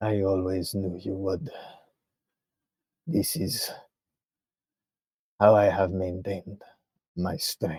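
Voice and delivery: weak, feeble voice. Voicing a captive answering a rescuer: weak voice. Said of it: "this is a weak, weak voice".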